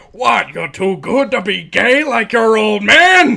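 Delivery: very high, loud, swooping, jeering tough-guy dad voice. Retelling a cartoon scene, voicing a big, beefy cigar-smoking dad: beefy tank-top dad character voice. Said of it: "big, beefy, five o'clock shadow, uh, tank top wearing guy just smoking a cigar".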